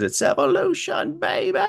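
raspy screeching voice, very high and rough. Imitating someone's catchphrase: imitating a screeching voice. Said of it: "when he does his screeching voice".

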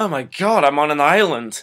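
put-on Scottish accent, said loudly. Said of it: "his Scottish accent is actually not that bad".

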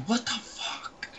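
put-on mad, breathy whispered outburst. Imitating how Joey was about to react when mad: imitating Joey getting mad. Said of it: "Joey was about to be so mad".

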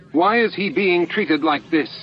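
high, insistent, demanding tone. A man, seeing his manacled friend led in by guards: demanded. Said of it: "He demanded".

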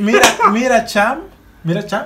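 attempted Venezuelan accent. Being taught a Venezuelan phrase, repeating it in an attempted Venezuelan accent. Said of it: "decirlo Con el con el acento venezolano".

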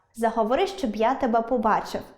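ordinary talk

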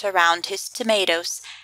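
plain

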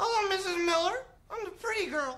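put-on puppet voice, small and little. Recounting a scene where a kid voices his mum puppet, little puppet mum voice. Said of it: "like, a little voice for the mum puppet".

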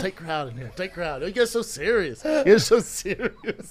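projected loudly, dry delivery. Retelling a fellow comic's line to a tight crowd at Improv, imitating it. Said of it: "You're all".

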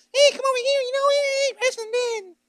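tiny, small, squeaky voice, very high-pitched. Imagining Paul as a little false prophet running around: squeaky Paul voice. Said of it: "a little squeaky voice".

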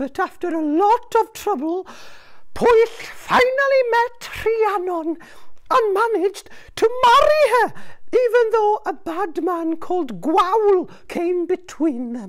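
very high, bird-like talking seagull voice. A seagull narrates the tale of Pwyll and Rhiannon to a traveller, talking seagull voice. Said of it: "A seagull. Oh, gwylan in Welsh".

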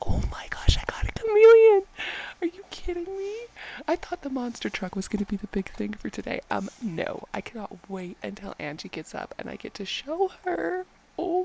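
bubbling over, excited, high and swooping. Playing a game while everybody's asleep and getting a chameleon, so excited. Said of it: "I'm so excited".

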